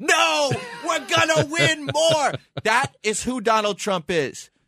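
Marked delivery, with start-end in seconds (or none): 0.0-2.3 high, hollered, shouted into the mic, screaming. Retelling a speech line screamed into the microphone: screaming like Donald Trump. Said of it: "he's screaming into the microphone".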